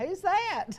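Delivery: high, baffled tone. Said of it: "people to look up on that screen and go".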